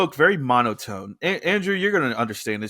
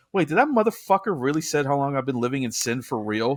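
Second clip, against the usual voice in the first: ordinary delivery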